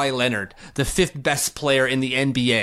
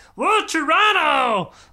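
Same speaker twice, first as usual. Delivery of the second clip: silly, taunting, mocking put-on voice; 3 dB louder than usual. Speaker who is close to blocking someone on Twitter breaks into a funny voice. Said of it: "Let me make funny voices about it".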